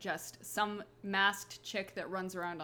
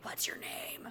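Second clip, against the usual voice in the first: creepy, eerie, breathy whisper. Retelling how a character approached female enemies: creepy Cree voice. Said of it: "would just really creepily be like".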